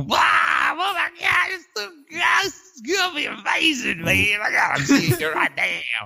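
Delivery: gushing, very high, swooping, sing-song and drawn out. Mocking an over-eager fan's reaction: sounding like Bill Cosby. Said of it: "that sounded like Bill Cosby a little bit".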